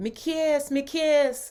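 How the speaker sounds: very high, very slow, drawn-out bad Jamaican accent. Speaker repeats words they heard someone say, in a not-good, inauthentic Jamaican accent. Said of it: "I have to do a Jamaican accent".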